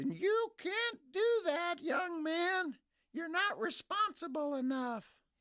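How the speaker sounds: put-on very high, slow, drawn-out old lady voice. Mocking what they in Austin would say, put-on old lady voice. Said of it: "Is that your old lady voice? That's it".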